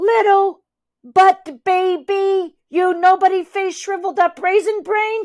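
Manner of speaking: loud, high-pitched yelling. A narrator reads a character's taunt just before she attacks, shouting. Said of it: "she shouts".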